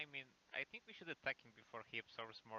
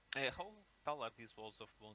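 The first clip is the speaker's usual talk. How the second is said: normal talking voice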